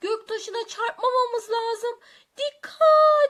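urgent, high-pitched, very loud shout. On a shaking space shuttle among asteroids with Feray, the narrator; shouting a warning. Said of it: "diye bağırdım".

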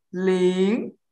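second tone on 'ling', pitch rising. Coaching a learner on the Mandarin second tone, rising tone on 'ling'. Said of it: "So make it rising".

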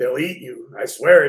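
frightening voice. Jasper warns a girl who says she has to go, frightening voice. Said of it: "His voice scared her".

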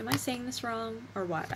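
normal talking voice

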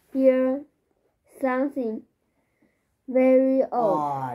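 ordinary talk

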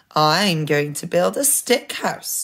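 proudly. The second little pig speaks to the man selling sticks; proud. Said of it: "he said proudly".

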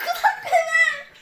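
high-pitched, loud, protesting while laughing.

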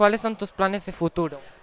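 ordinary delivery

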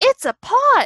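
eager, excited, very high, loud calling voice. A character spots something near the bridge and calls to the others: calling out excitedly. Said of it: "Roo called excitedly".

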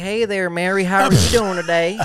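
put-on Tennessee accent. Show how you would greet people from Gatlinburg, in your put-on voice for Gatlinburg callers. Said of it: "if I would get people from Gatlinburg, I'll be like".

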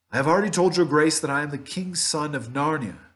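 stern, firm voice. The prince answers the witch, addressing her as madam, speaking sternly. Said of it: "said the prince sternly".

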